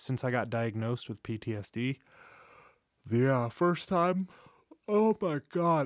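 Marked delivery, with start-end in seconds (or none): 3.1-5.9 high, loud speech through a yawn. Speaking to his audience about his PTSD diagnosis: yawning. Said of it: "I'm so sorry for yawning".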